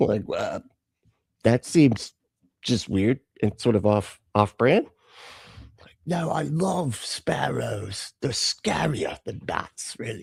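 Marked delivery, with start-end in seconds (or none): 6.1-10.2 soft, bad, terrible fake British accent. Answering a question about sparrows, the speaker puts on a terrible british accent. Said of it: "That was a terrible accent".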